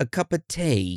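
high-pitched, put-on, best-try British accent. Recording a birthday message for Dom, best British accent. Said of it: "in our best British accent".

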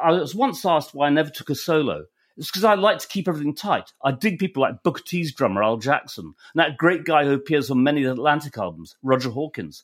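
ordinary talk

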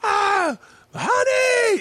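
shouted, very high stage shout. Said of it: "just shouting every fucking punchline".

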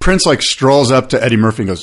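ordinary delivery

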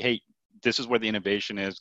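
normal talking voice

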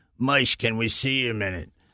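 hard-man, tough-guy street way of talking. Retelling how two big tough guys asked someone for a minute: imitating tough guys' way of talking. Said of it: "Everybody talked like that".

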